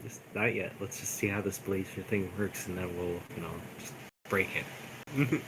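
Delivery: hushed stage whisper aside, low volume. Telling other characters in a scene to hold off, half-whispering in character. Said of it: "I'm just gonna whisper to them".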